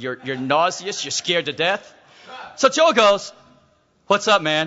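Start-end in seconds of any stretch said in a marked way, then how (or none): 4.1-4.7 mock, forced casual, faked calm, acted relaxed. Retelling how a scared man greeted a gang: imitating someone playing it cool. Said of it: "tries to play cool".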